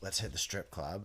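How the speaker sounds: normal talking voice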